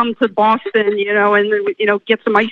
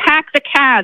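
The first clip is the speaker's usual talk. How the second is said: put-on South Boston accent, r's dropped; 4 semitones higher than usual. Doing an accent for the listener on the spot: boston accent. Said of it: "I'll do a Boston accent for you".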